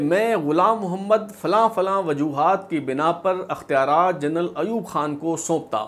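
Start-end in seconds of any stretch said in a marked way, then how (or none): none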